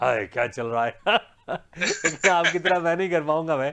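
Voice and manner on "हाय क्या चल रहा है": lower-pitched, laughing, imitated voice. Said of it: "Amitabh Bachchan के style में बोलूँ".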